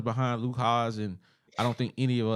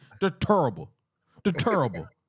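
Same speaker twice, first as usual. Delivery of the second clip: high put-on voice with wide swooping pitch; 5 semitones higher, 4 dB louder than usual. Complaining about a team's rushing stats, doing a Charles Barkley voice. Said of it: "I'm gonna say it in my Charles Barkley voice".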